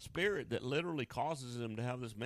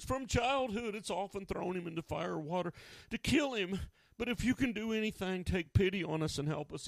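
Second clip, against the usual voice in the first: high voice losing its calm; 7 semitones higher, 4 dB louder than usual. The speaker retells the boy's father answering Jesus: retelling a not-so-calm answer. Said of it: "answered in a not quite so calm voice".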